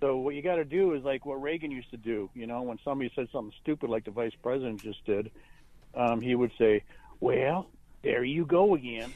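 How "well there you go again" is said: slow, easy, unhurried, drawn-out dismissive delivery. Quoting a president shutting down a rival: Reagan impression. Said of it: "Not a bad impression".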